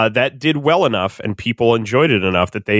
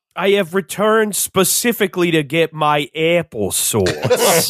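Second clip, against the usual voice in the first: bad put-on New York accent, pitched up; 6 semitones higher than usual. Announcing a return on joining as a guest: horrible new york accent. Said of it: "The horrible New York accent".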